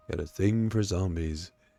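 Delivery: voice dropped way down, deep and low. Repeating a message to show how it comes across: deep voice. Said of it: "said with a deep voice".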